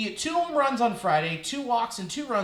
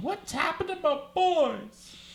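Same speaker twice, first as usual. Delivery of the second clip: put-on tearful blubbering whine, high sobbing; 7 semitones higher than usual. Joking about the Reds taking two of three from the Mets, mock-crying Grimace voice. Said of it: "Grimace is crying in his purple cave going".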